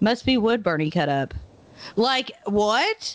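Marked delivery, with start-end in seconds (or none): 0.0-1.3 mock-nonchalant, matter-of-fact offhand tone. Retelling a story, the speaker quotes a man answering a woman: retelling a nonchalant remark. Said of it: "he just so nonchalantly just goes".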